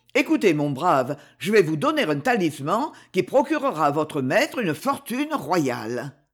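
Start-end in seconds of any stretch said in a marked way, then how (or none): none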